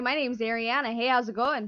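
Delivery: normal voice, plain delivery. Repeating her introduction after being asked to speak up: speaking up louder. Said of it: "We could actually have you speak up a little bit".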